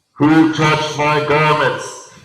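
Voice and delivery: very loud, resounding, booming, slow call. Retelling a Gospel scene, the speaker delivers the quoted question in a booming voice. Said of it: "Maybe in a booming voice like that".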